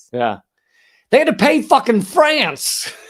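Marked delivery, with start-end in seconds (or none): 1.1-2.9 very loud, high, shrill put-on angry yell. Saying a punchline after asking to say it angry: mock angry. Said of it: "Can I say it angry?".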